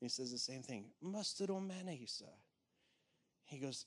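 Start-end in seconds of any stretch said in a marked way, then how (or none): 1.0-2.3 put-on high English accent. Retelling a court jester's lighthearted question to Graham Cooke: Graham Cooke's English accent. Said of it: "I'm gonna try to copy it".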